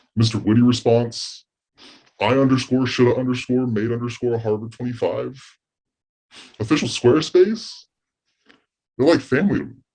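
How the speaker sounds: fake tearful voice, catching and choked up. Thanking online forum members in a skit, mock emotional, choking up. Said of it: "I get emotional when I think about them".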